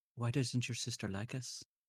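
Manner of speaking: soft, hushed whisper, very close to the ear. Leaning in close to whisper a question into her ear. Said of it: "lean in and then whisper into her ear".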